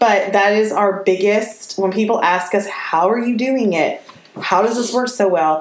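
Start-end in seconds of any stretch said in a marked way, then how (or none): none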